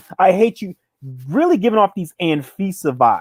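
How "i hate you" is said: imitated scream, higher. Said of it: "screaming at him".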